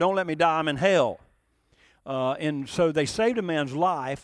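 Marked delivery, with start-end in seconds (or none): none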